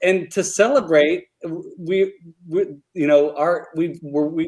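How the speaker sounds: halting, tangled restarts, stumbling over words. Announcing a new co-host to the chat, stumbling over words. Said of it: "I'm stumbling over my words".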